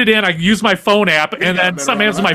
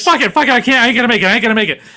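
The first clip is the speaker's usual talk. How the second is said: put-on desperate panicked pleading, higher; 3 semitones higher than usual. Retelling a friend on a long exit ramp: imitating a desperate friend. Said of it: "He's like".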